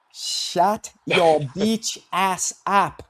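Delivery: very slow, dragged-out delivery. Asked to do the impersonation of Fight Sports Talk: Fight Sports Talk impersonation. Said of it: "can you do his impersonation".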